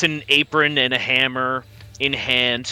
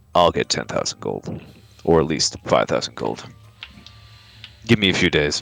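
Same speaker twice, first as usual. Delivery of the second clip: very low, muttered under the breath; 10 semitones lower than usual. Amun answers the question about getting the gold, muttering under his breath. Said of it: "he says under his breath".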